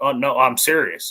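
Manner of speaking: acted, slow, offhand and unbothered nonchalance. Retelling how Brett insisted to a laughing crowd: imitating Brett nonchalantly. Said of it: "nonchalantly just being like".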